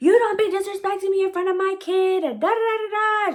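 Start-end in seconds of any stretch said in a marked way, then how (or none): 0.0-2.2 mock high-pitched scream at full volume. Retelling the mother's angry reply: imitating someone screaming. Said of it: "She's screaming at the top of her lungs".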